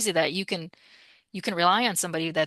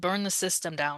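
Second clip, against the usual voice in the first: put-on stern voice, quieter; 4 dB quieter than usual. Retelling a dead father's words from a trance session: imitating a stern voice. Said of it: "he gave me a very stern voice".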